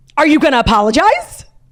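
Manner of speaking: yelled, loud and shrill, sounding deranged. Retelling a confrontation with a woman while walking Romeo, imitating her yelling. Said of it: "she was yelling".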